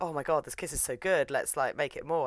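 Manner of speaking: usual speaking voice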